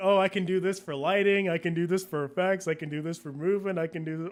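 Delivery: ordinary talk, nothing marked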